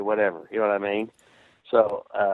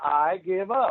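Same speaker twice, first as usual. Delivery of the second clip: loud, pleading screaming; 9 semitones higher than usual. Speaker recounting a match, telling the referee he gives up, retelling a scream. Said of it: "I start screaming".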